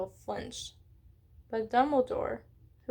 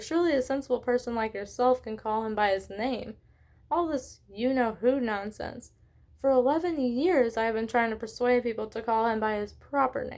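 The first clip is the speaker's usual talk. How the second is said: plain reading voice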